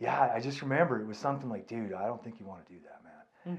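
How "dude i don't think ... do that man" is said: put-on whisper, quieter. Recalling what a man told them years ago: retelling a whisper. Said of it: "his voice was that like creator whispering".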